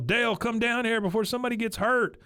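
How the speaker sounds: mock shrill, very high, rushed, rattled-off scream. Retelling a plot, acting out Hank yelling down to Dale: retelling Hank's scream. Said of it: "He screams at Dale".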